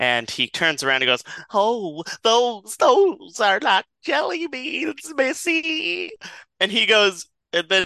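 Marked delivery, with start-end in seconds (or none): 1.5-6.1 very high, slow, drawn-out creature voice. Retelling a man's reply to a woman questioning him, in a Smeagol-like voice. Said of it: "I'm getting like a Smeagol from Lord of the Rings energy".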